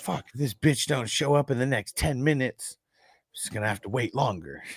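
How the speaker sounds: angry, pissed-off, complaining rant. Retelling a movie scene where he waits at home for her, imitating an angry rant. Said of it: "he was so pissed".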